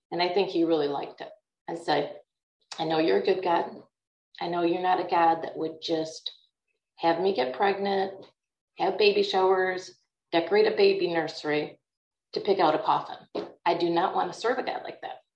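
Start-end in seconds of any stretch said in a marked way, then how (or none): none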